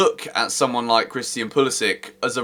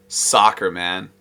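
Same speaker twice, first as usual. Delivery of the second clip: soccer in a put-on American accent; 5 semitones lower than usual. Saying the word soccer to show off: put-on american accent. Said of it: "There's an American accent for you".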